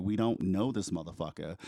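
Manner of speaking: normal talking voice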